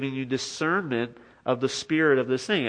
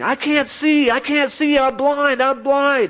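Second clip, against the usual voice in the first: mock very high, wailing, drawn-out scream; 12 semitones higher, 6 dB louder than usual. Retelling how a witch doctor screamed as a man came closer: imitating someone screaming. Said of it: "starts screaming".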